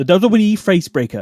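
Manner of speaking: put-on, high, rural old farm-lady accent. Retelling a show, quoting an old lady on a farm, imitating an old lady's accent. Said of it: "great attempt at the accent".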